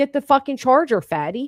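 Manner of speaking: put-on high, mild pre-teen child's yell. Retelling what a boy was heard screaming at his mom: imitating a child screaming. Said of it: "we hear him screaming".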